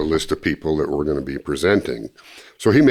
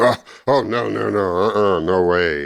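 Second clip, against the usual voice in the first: put-on stammer, higher, much slower; 5 semitones higher than usual. Retelling his reaction to the speaker's request to come along, imitating his stammering. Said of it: "He started stammering and stuttering".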